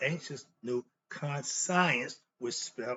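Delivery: ordinary talk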